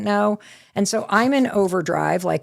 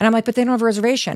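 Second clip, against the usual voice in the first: normal talking voice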